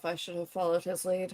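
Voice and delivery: barely audible, very quiet mumble to herself. Voicing a character in the game who mutters to herself, muttering to herself. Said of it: "She like mutters to herself".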